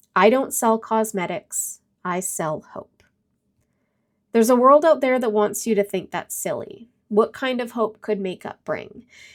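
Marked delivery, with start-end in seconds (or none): none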